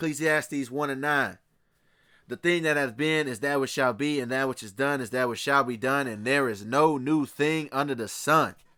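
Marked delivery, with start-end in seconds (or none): none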